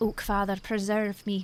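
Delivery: put-on Irish accent. A player trying a Scottish accent slips into an Irish accent. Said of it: "That was Irish".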